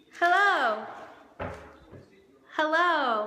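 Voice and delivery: loud, high, called-out voice.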